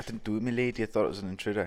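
awful fake South African accent attempt. Quoting what a man claimed, doing an awful south african accent attempt. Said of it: "Is that meant to be a South African accent?".

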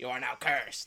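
nice yet evil character voice. Showing how the wrestler curses people: Danhausen voice. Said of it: "and he's like".

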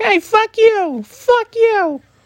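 funny puppet voice, very high and drawn out. Reviewing a movie, the speaker quotes a puppet whose taxi was stolen, funny puppet voice. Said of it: "the puppet just kind of has a funny voice".

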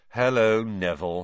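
ordinary delivery

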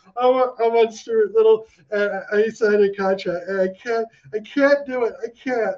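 mock teary, high, stammering, tearful pleading. Retelling own past words on a call about a job interview: imitating own past tearing up. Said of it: "tearing up and going".

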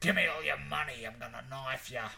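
would-be American accent attempt that misses. Voicing an imagined american badger, attempted american accent. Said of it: "he'd say it with an American accent".

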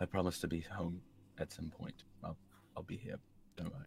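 hushed whisper. Voicing a character's words during an embrace, in a quiet whisper. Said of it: "Zal quietly would whisper".

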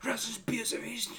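frantic, panicked, very high outburst. Retelling how a kid complained after being punched: imitating someone freaking out. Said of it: "starts freaking out".

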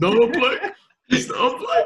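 imitated rough, raspy voice. Talking about a player's raspy voice, then doing it: imitating a raspy voice. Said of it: "he's got the raspy voice".

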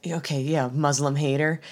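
put-on muttering under the breath. Retelling how a character insulted someone: imitating muttering under breath. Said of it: "under his breath is like".

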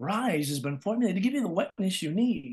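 gentle, eased-off, neighborly voiceover tone. Recalling learning voiceover, demonstrating a commercial line: soft next-door-neighbor read. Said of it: "I learned how to soften and go".

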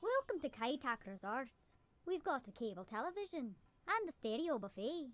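put-on Irish accent, very high and soft. Greeting guests at Kaitak Resorts: put-on Irish accent. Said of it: "What is that accent?".

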